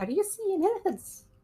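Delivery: quietly under breath. A player's character speaks discreetly to one companion; quietly under her breath. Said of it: "very quietly under her breath and like discreetly".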